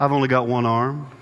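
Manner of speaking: flat deadpan tone. Retelling how a man answered people who asked his handicap, quoting a deadpan reply. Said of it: "he'd just deadpan look at him".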